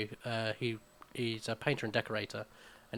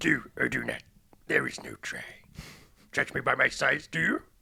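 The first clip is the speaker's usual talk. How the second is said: put-on wise old alien voice, louder; 3 semitones higher, 7 dB louder than usual. Opening the episode with a Yoda voice. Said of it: "that was my Yoda impression".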